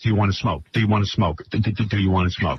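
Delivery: mock under-breath mutter. Retelling how John kept asking about smoking: imitating John muttering under his breath. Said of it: "He's muttering under his breath".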